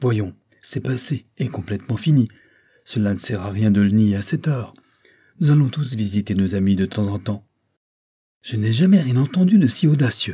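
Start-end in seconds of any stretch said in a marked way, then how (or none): 8.4-10.3 sudden, high-pitched protesting cry. The narrator reads a sworn witness answering the lawyer: exclaiming. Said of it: "s'écria Affy".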